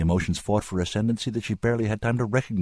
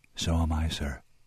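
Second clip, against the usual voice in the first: barely audible, hushed, soft voice; 3 semitones lower, 4 dB quieter than usual. A woman answers a man who says he is bitterly sorry, softly, almost inaudibly. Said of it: "she said softly, almost inaudibly".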